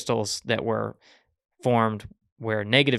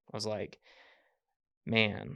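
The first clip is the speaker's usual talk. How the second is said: normal talking voice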